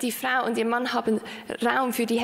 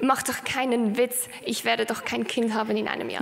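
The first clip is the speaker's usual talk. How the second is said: ordinary delivery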